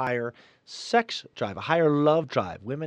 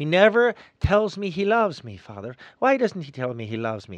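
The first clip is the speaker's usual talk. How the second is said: woman's voice in a put-on Irish brogue; 2 semitones higher than usual. Telling a joke, quoting a wife speaking to the priest, Irish brogue. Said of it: "I'm putting my Irish brogue on this".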